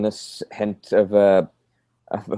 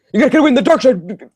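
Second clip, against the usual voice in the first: very high, rapid, annoying and irritating babble; 5 dB louder than usual. Imitating how someone would say a line, fast irritating babbling. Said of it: "he'd be saying it in a much faster voice, like a really like sort of a babbling in an irritating way".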